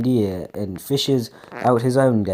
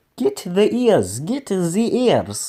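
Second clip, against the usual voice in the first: put-on, bad German accent, much higher, slower; 8 semitones higher than usual. Giving their guy a voice for an exclaimed line, bad attempt at german accent. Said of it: "I think this is German".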